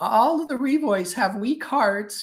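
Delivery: put-on very high, elderly great-grandmother voice. Retelling what their great-grandmother always used to say, imitating great-grandmother's voice. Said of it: "She had a voice like that".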